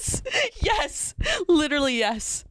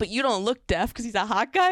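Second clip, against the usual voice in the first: plain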